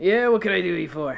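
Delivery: little gnome character voice. Voicing a gnome who looks up from whittling at two visitors: gnome character voice. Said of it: "he's a little gnome ... he looks up at the two of you and he goes".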